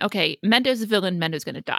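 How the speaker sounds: usual speaking voice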